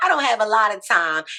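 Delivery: very fast, loud, rushed rambling speech.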